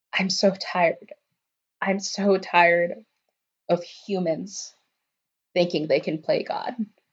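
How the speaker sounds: hushed half-whisper under the breath. Narrating a scene as a girl hits the concrete, Debra half-whispering. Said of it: "she just whispers".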